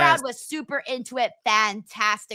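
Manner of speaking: plain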